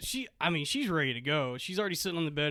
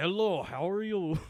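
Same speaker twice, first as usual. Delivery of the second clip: put-on thick Russian accent; 3 semitones higher than usual. Retelling a woman who looked nothing like her picture greeting them: thick russian accent. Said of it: "she has like a thick Russian accent".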